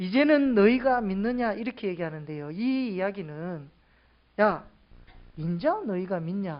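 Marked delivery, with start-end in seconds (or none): 4.4-6.6 scoffing, derisive, sneering, sarcastic tone. Explaining a bible verse, showing how it is not meant: sarcastic mocking question. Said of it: "이런 비아냥거리는 말투가 아니라".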